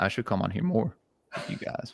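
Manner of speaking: cracking, breathy, half-whispered breaking voice. Telling the others in the conversation something, voice cracking. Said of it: "my voice just cracked".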